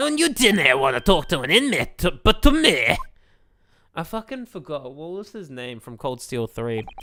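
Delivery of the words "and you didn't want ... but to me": put-on Scottish character accent. Voicing a game character again in a remembered voice: Scottish accent. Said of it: "Yes, Scottish".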